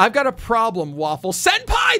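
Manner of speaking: full-throttle all-out shout, loud and high. Reading out a message written in caps, shouting the all-caps words. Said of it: "That was in caps, so I felt like I had to really go for it".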